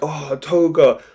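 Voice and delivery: sobbing, tearful, crying wail. Retelling an anime scene where a character cries on a hill: imitating Ochako crying. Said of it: "she's crying like".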